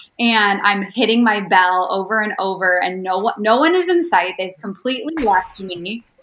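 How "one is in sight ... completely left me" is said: ordinary talk, nothing marked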